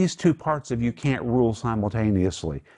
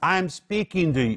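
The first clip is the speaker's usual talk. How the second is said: mock raised voice, high and drawn out; 7 semitones higher than usual. Giving an example of speaking to your children: retelling a raised voice. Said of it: "You have to raise your voice".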